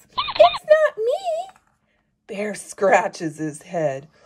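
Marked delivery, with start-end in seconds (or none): 0.2-1.6 very high, loud, tiny squeaking mouse voice. Reading a story where a mouse in a tree answers a bear, in a squeaky mouse voice. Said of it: "Mouse scurries up and squeaks".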